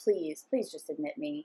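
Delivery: acted desperate pleading. Retelling being taken to the hospital, at the front desk: retelling breaking down, pleading. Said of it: "I just broke down at the desk".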